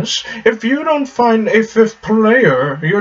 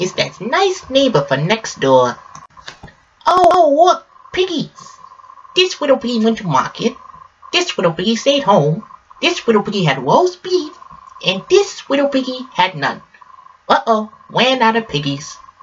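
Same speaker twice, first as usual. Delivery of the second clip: little cartoon canary voice with a lisp. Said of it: "I thought I saw a putty tag. I did throw a putty tag".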